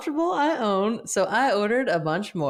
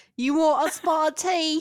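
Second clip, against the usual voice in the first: put-on Cockney accent, pitched up, done for show; 7 semitones higher than usual. Asked which accent this is, the speaker demonstrates a cockney accent. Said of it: "That's my Cockney".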